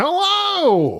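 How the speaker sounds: very high, energetic, peppy, drawn-out voice. Greeting again after being asked for more energy, with pep. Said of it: "There, that's what we need".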